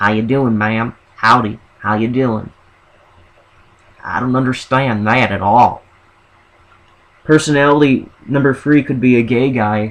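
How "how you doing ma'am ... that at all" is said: friendly Southern American accent. Describing an imagined second personality, the same guy in a Southern accent. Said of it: "but with a southern accent. He would be like".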